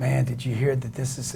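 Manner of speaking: secretive, hushed half-whisper, very soft. Acting out the guy at the water cooler sharing gossip: imitating someone half-whispering. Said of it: "why you whispering".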